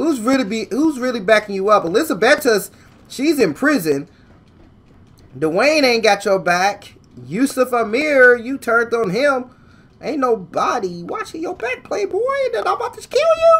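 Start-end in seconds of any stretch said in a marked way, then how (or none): 12.5-13.6 sudden jump to a very high-pitched voice. Playing GTA 5, speaker talks back to a game character, voice suddenly going high. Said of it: "my voice just got high right there".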